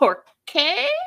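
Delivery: slow Spanish, dragged word by word, high and loud. Retelling a question asked in Spanish: Karen's slowed-down Spanish. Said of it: "she just slows it all down".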